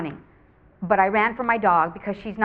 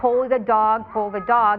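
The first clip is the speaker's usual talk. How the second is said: plain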